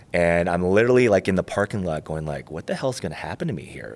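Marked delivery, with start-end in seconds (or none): 2.5-3.9 play-acted fearful freak-out, rattled off fast. Before a back injection, the speaker retells freaking out in the parking lot. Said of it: "Like I'm freaking out".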